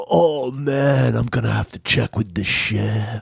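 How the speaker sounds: goofy, comical cartoon surfer-dude voice. Retelling what a man answered when asked about their order, in a comical surfer voice. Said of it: "he had that like comical surfer voice".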